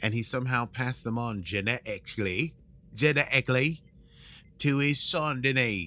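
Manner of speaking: attempted British accent.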